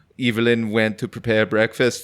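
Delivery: put-on heavy German accent. Acting out the voice that narrates a confused woman's actions, in a Werner Herzog voice, heavy German accent. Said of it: "has a heavy German accent".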